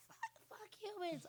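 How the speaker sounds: put-on very high, soft, squeaky little-kid voice. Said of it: "I didn't have a squeaky voice when I was a kid".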